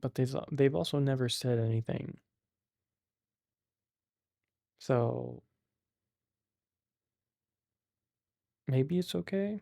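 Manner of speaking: half-whispered, slightly whispery voice. Speaking close to the mic so listeners can hear, whispering-ish.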